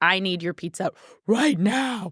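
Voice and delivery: put-on deep, dropped low voice. Retelling a text sent while pregnant, deep voice. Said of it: "with a deep voice".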